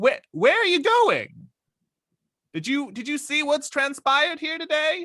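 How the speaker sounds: high, loud hollering call. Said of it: "and holler".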